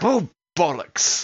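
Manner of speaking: put-on London cockney accent. As a player's character, Axel, is caught in a steel net, he exclaims in a cockney accent. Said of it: "Is that cockney enough for you".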